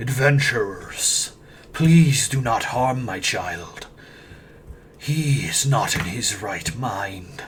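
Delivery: deep, resonant, echoing voice from far back. Game master voices a figure calling from the back of the chamber, deep, echoing voice. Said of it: "deep, echoing voice come from the back of the chamber".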